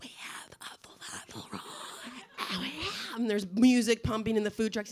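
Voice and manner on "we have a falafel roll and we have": hoarse whisper with voice almost gone. Quoting a food truck worker reading the menu: imitating a lost, hoarse voice. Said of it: "the girl has lost her voice".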